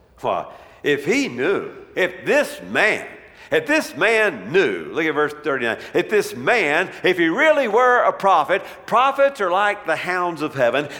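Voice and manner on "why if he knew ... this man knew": slow, disdainful, doubting voice. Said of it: "You can kinda hear the disdain in his voice".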